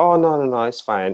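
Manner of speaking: put-on forced casual tone masking anger. Acting out an angry mom reassuring her child: imitating forced casual reassurance. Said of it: "she's pissed, but she's just playing it off like it's nothing".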